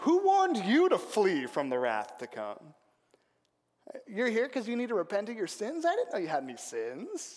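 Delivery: acted dry tongue-in-cheek sarcasm, swooping pitch. Retelling a question put to religious visitors, imitating a tongue-in-cheek remark. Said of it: "he says tongue in cheek".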